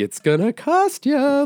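slow, very high, drawn-out teasing taunt. Describing a character who keeps showing up in a show, imitating a taunting character. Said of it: "he's like a taunting kind of character".

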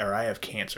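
ordinary talk

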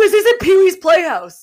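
very high, shrill, furious angry yell. Retelling the landlord seeing the painted rooms: imitating the landlord yelling. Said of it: "and he just yelled".

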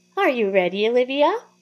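shrill, squeaky, high puppet falsetto voice. The narrator reads the puppet's question, spoken through the narrator's own lips: squeaky high falsetto puppet voice. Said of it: "it says in its squeaky, high falsetto".

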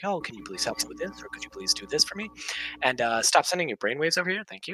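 put-on calm, composed, courteous voice. Retelling how they spoke to teachers: imitating own calm polite voice. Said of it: "I would speak to them like this".

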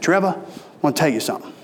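put-on thick, heavy Southern accent. Speaker quotes a man talking to them during a duck hunt, thick southern accent. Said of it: "real thick southern accent".

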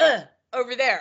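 curt, offhand, dismissive tone with attitude. Retelling a store worker's answer to a restroom question: imitating a dismissive attitude. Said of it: "he had an attitude".

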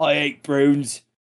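put-on English gangster accent. Joking about hating prunes: English mobster voice. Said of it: "Are you doing the English mobster?".

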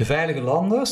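stress and rising pitch on LANDERS in veilige landers.

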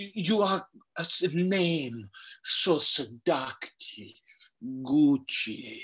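very slow, lingering, every word drawn out. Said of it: "it's just [name] being like".

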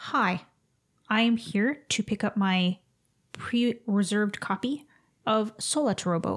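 put-on stilted, awkward, very slow delivery. Retelling how a customer greeted the counter: imitating Goggles sounding awkward. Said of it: "he's all awkward".

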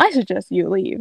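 ordinary talk, nothing marked

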